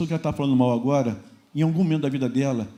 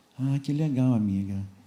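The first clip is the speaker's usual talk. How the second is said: put-on deflated, less cheerful tone; 2 semitones lower, 3 dB quieter than usual. Acting out the friend hearing about a europe trip: imitating a less cheerful voice. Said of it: "a voz dela já não é mais tão otimista".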